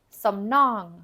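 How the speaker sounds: stress on nong.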